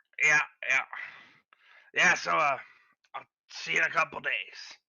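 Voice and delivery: hoarse, scratchy, raspy official's voice. The game master voices the town speaker who hired the party, raspy town speaker voice. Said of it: "Yeah, this guy's voice is a little raspy, / I'm sure you're a busy speaker".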